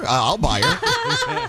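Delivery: high, slow, joking voice through a laugh.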